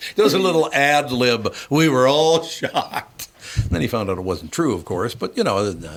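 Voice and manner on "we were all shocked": mock drunken speech, higher and louder. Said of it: "still hammered".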